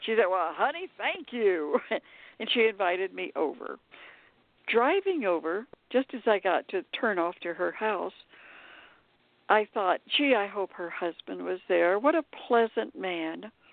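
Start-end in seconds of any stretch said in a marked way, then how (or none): 0.3-1.8 big farm-lady voice with swooping, swinging pitch. Retelling how a movie star replied to the speaker, in a booming Margie May voice. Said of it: "big booming voice like a farm lady".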